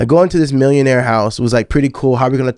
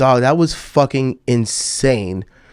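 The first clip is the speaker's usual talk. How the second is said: plain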